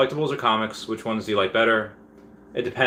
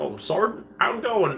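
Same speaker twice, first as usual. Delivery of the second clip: put-on goofy, doofy old-school voice, very high; 9 semitones higher than usual. Speaker imitates people greeting a sergeant while trying to be doofy: mimicking a doofy greeting. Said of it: "people that are just trying to like be doofy".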